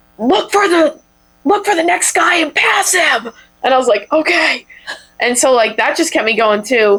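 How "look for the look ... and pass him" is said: acted, high, full-throated screaming at full lung. Recalling a woman on the bike and run course, retelling a woman screaming. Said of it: "was screaming at the top of her lungs".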